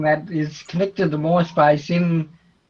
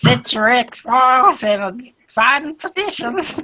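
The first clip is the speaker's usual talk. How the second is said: drawled Deep South accent; 7 semitones higher than usual. Redoing a line just said, this time in a Deep South accent. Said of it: "you got to use the deep southern accent for that".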